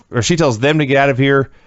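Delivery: plain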